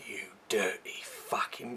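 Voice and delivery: put-on London accent. Retelling a film line where a character drops into his London accent: imitating Michael Caine's London accent. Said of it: "goes back to his kind of original accent".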